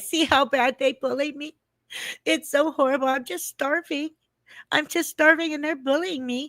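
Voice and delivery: acted-out high, whiny, wounded martyr voice. Acting out how she plays the victim, mock victim whining. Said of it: "you're doing that a little too well now".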